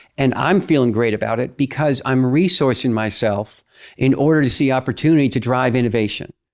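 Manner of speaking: ordinary talk, nothing marked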